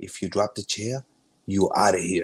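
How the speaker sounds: hushed stage whisper, as if close to the ear. Recalling a man at practice who kept coming over, imitating a half-whisper. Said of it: "kept coming over and whispering".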